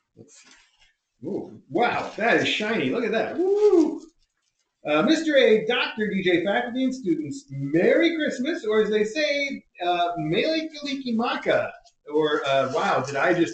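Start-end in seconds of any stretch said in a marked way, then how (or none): 10.1-11.7 American Midwest accent, slightly higher pitch. Reading out a Christmas greeting: Midwest accent. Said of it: "I said that with a perfect Midwest accent".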